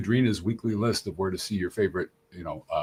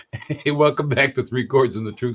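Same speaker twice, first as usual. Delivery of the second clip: giggly, laugh-filled talking; 4 semitones higher, 4 dB louder than usual. Host welcoming listeners back to three chords and the truth, laughing while talking. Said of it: "we're just laughing a little bit too much".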